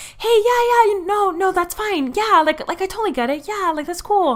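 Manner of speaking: very high eager voice. Describing how the speaker compensated for fear of not being liked, imitating own raised voice. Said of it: "raising my voice".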